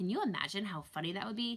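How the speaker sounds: plain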